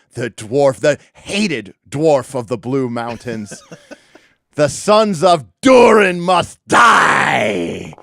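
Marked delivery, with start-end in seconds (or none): 4.5-7.8 hateful, loud, high-pitched bellowing war cry. A game master voicing an orc attacking a dwarf, bellowing a hateful war cry. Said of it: "he bellows a ancestral hateful war cry".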